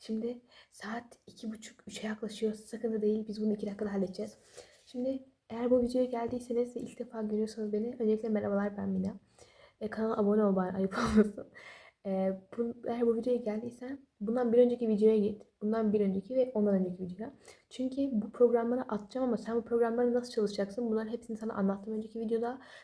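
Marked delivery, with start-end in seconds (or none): 0.0-2.5 soft, hushed whisper. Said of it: "O yüzden biraz sessiz konuşacağım".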